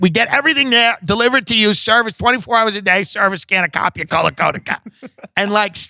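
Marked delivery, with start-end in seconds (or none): 0.0-4.8 rapid, nonstop, overwhelming sales patter, higher pitch. Retelling a coworker's phone sales pitch: imitating rapid nonstop sales patter. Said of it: "She would just overwhelm him with words".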